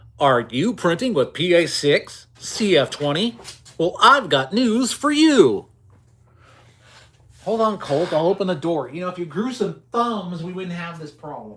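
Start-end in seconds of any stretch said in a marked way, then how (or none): 0.2-5.7 slow, drawn-out radio ad announcer voice. Speaker breaks out an announcer voice mid-conversation: announcer voice. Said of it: "Let's break out my announcer voice now".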